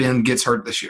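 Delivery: hushed, secretive whisper. Making a prediction to the other speakers, whispering. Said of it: "why are you whispering that?".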